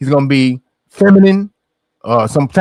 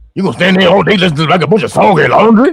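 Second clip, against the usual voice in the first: scornful, derisive, scoffing delivery; 2 semitones higher than usual. Repeating a character's line after "listen to how he talk": mocking imitation of how he talks. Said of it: "Who talk like that?".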